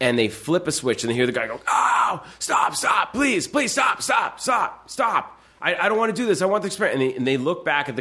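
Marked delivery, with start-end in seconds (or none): 1.7-7.2 mock desperate, frantic begging scream, pitched very high. Describing an experiment, speaker acts out the hurt man in the other room, imitating a man screaming. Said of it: "but he's screaming there".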